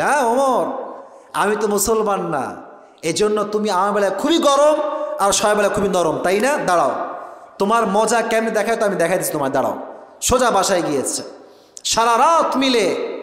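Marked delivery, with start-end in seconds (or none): none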